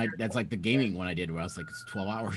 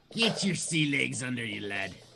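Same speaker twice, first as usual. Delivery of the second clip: unhurried cartoon crab character voice, slow and drawn out; 3 semitones higher than usual. Telling another speaker who is getting seasick to find sea legs: Mister Krabs voice. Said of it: "he's my Mister Krabs impersonation".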